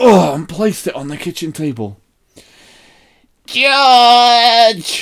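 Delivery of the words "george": piercing, shrill, loud, drawn-out call. Narrator reads Grandma calling George from the next room, in a shrill voice. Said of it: "Came the shrill voice from the next room".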